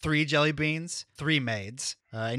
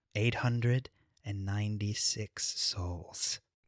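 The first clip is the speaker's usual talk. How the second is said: close hushed whisper, lower and quieter; 5 semitones lower, 6 dB quieter than usual. A game narrator voices a character leaning in to a player, whispering in your ear. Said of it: "you hear him whisper in your ear".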